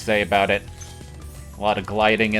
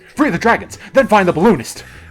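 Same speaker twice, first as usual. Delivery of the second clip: put-on manic wired voice, much higher, louder; 11 semitones higher, 8 dB louder than usual. Riffing on a game character's beta voice, imitating a hyper, wired voice. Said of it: "Are you okay, man?".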